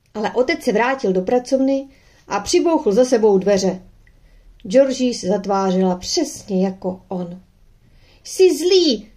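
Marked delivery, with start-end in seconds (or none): 8.2-8.9 sudden high-pitched cry, voice thrown up high. Narrator reads Georgie after her father slams the study door, crying out. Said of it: "vykřikl".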